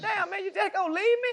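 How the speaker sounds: very high-pitched, whining voice.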